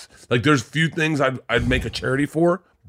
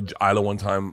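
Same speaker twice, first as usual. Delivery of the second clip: normal talking voice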